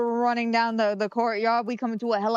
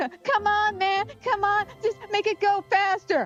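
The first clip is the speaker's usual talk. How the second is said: mock frantic, panicked pleading tone, very high pitch; 10 semitones higher than usual. Retelling a zombie attack, quoting a panicking companion: imitating panicked pleading. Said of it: "Grace is panicking".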